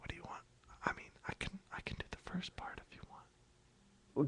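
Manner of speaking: very quiet, mumbling, unenunciated, barely audible whisper. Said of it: "Girl, you need to enunciate".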